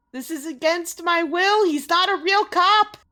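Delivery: put-on high, loud, panicked screaming in a child's voice.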